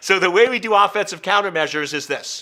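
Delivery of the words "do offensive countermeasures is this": normal talking voice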